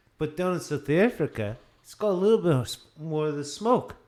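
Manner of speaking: put-on South African accent, loud, hurried and fast. Describing a South African Shiraz to others, attempted South African accent. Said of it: "Are you trying to do a South African accent?".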